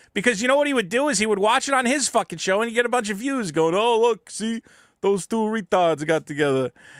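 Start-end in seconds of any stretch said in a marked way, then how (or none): 3.7-6.7 put-on Italian accent, slow and drawn out. Imitating how another show host would react, in put-on Italian accent. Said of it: "why are you giving him a Dago accent?".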